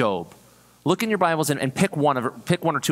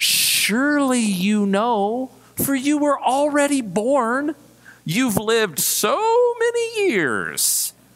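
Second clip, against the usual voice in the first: very high, swooping, mocking and sarcastic tone; 11 semitones higher than usual. Reading God's words to Job aloud, showing the common reading, sarcastic. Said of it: "Did any of you read it sarcastically?".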